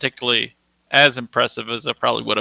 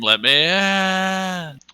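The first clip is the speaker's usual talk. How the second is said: high scream, final word stretched out; 7 semitones higher than usual. Acting out a character's line in a game: screaming. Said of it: "And I scream".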